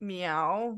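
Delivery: soft, disgusting, gross cat meow.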